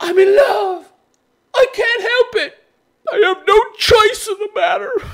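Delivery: blubbering, sobbing crying voice, very high-pitched. Mocking a guy who claims love leaves him no choice: mock crying. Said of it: "I can imagine this guy fucking crying like this".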